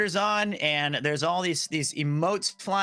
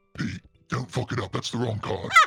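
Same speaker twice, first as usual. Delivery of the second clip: put-on very deep voice, pitched lower; 7 semitones lower than usual. Retelling a friend's messages about a card game: imitating Connor. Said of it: "you do an impersonation of him very well".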